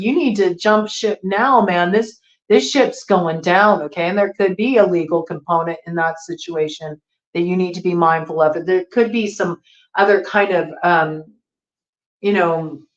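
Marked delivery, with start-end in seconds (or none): 0.0-3.8 mock, light, mild, half-yelled hollering. Giving a Taurus reading, acting out people in an escape dinghy, imitating someone hollering. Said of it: "they're kind of hollering at you like".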